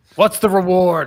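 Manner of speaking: very loud, high-pitched shout. A player acts out their character calling out from the other side, yelling to the sky. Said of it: "As I yell to the".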